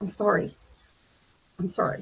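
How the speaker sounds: breathy, tearful, choked-up near-whisper. Retelling how the guys stopped mid-story: imitating a choked-up apology. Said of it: "and get really choked up".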